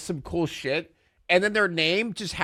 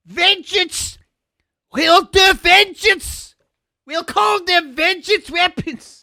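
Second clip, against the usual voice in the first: put-on British accent, very high, very loud; 13 semitones higher, 8 dB louder than usual. Mocking the name vengeance weapons in a put-on british accent. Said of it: "United Kingdom".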